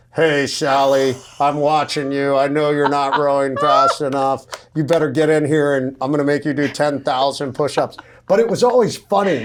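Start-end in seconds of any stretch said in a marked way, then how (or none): 0.2-8.0 mock instructor voice calling over a megaphone. Recalling rowing training in the ocean, imitating instructors on a megaphone. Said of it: "you'd hear them on the megaphone".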